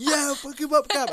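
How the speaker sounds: very high, pumped-up, hyped cheering shout. Speaker reenacts their own shouting while watching Cap fight Thanos, retelling a cheering shout. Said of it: "I'm like shouting".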